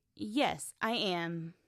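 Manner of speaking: voice drops at the end on am. Teaching statement intonation, an example answer with falling intonation on "am". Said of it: "In statements, your voice goes down".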